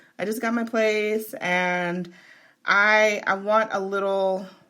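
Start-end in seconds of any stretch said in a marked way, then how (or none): none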